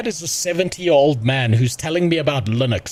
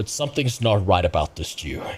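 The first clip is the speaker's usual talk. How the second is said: put-on very low, ominous, menacing voice; 8 semitones lower, 4 dB quieter than usual. Retelling how an old man would react while watching, in a mock-threatening voice. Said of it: "in such a threatening voice".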